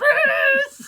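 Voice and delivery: high, loud stadium-style yell while laughing.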